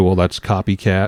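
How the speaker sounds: ordinary talk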